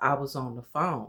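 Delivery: plain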